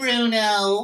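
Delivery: high, slow, sarcastic taunt. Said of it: "that kind of sarcastic".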